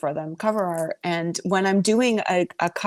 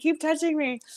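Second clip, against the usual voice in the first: put-on, high-pitched full-on scream; 10 semitones higher than usual. Retelling what was yelled during a show: imitating own screaming. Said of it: "I was screaming".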